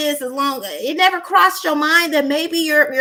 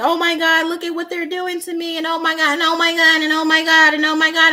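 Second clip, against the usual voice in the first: mock tearful crying voice. Retelling own past complaints about mistreatment: imitating own past crying. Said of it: "I lost so many years crying".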